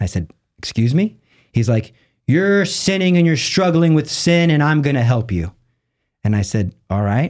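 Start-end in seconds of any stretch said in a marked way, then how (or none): 2.3-5.5 play-acted big booming voice, pitched up. The speaker quotes a man talking to him in his office: imitating a booming voice. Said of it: "he had a very booming voice".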